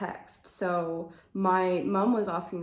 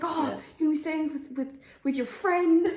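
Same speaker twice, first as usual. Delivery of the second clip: high, very enthusiastic voice with eager, gushing cheerfulness; 9 semitones higher than usual. Retelling what mum said about the trip: imitating mum's enthusiastic voice. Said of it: "the whole time she was very enthusiastic".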